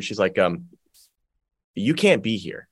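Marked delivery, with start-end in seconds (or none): 1.7-2.5 mock whisper, quieter. Retelling what a lady whispered in their ear, imitating a whisper. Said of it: "this lady whispers in my ear".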